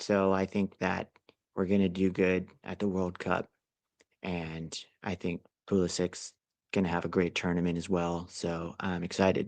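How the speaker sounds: flat, low, droning monotone with no excitement. Mocking how a soccer pundit talks about the World Cup, monotone Landon Donovan impression. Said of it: "It's so monotone when he talks".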